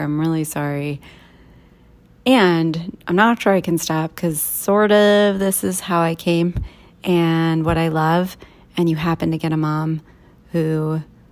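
ordinary delivery

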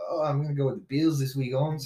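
slangy, casual voice. Imitating a friend picking a defense: imitating Jaime. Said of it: "Bro, I can't believe you did that".

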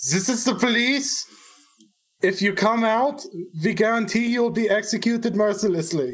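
high-pitched, hollered, fully in-character yell. Playing a character who runs up beside Griglak: yelling in character. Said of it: "run up beside Griglak and yell".

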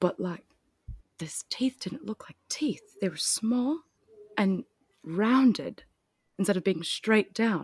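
put-on British accent throughout. Talking about a deal breaker before dropping the bit, put-on british accent. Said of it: "I'm going to stop doing the accent".

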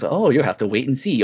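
put-on unsettling, creepy delivery with audible smile. Retelling the alternate ending, quoting Isaac: Isaac creepy smiling voice. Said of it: "creepily smiling".

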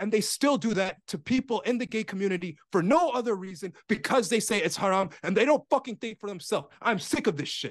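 screaming and shouting. Ranting about how people are treated, screaming and yelling. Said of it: "I'm sorry for screaming and yelling".

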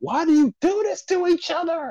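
high-pitched screamed outburst. Retelling a favorite scene from a show: imitating a character screaming. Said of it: "he just screaming, like".

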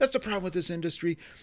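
put-on angry outburst. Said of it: "he got crazy angry, started yelling".

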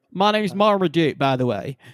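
slow, easy southern drawl. Imitating the dog's voice from the trailer: Marmaduke voice with southern drawl. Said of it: "he's got, like, a southern drawl".

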